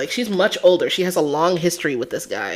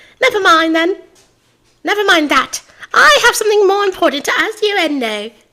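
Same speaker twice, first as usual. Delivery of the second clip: very high, shallow character voice with no depth, louder; 13 semitones higher, 5 dB louder than usual. Showing how the character would sound if the voice is not fixed: Simon Blackquill voice without depth. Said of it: "That's what he's gonna start sounding like".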